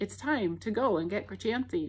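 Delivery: plain reading voice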